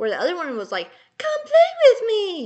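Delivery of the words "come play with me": very high, loud, bright happy toy voice. Imitating the other creepy toy's line: mock-happy toy voice. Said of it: "very happy pitch".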